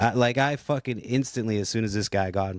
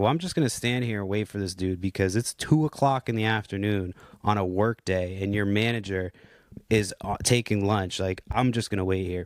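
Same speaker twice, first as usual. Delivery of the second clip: ordinary talk, nothing marked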